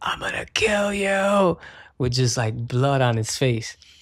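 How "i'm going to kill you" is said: high-pitched, drawn-out screaming. Retelling how a bloodied opponent threatened while being pushed out: imitating someone screaming. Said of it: "is screaming at me".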